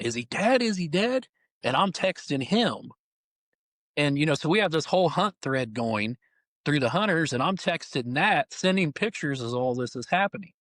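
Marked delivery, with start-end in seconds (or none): 0.0-1.3 high-pitched, urgent hollering, repeated. Recounting a hunt, quoting the owner standing above them, retelling the owner's hollering. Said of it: "he's hollering".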